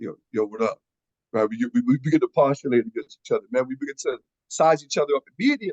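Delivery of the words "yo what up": posturing, low, sizing-up voice, dropped way down deep. Acting out greeting another man as he walks in: much lower voice. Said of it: "your voice gets 3 octaves lower".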